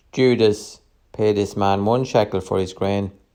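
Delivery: plain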